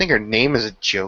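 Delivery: sour, spiteful tone with very bitter inflection. Complaining about a woman the other speaker defends: very bitter inflection. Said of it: "with a very bitter inflection".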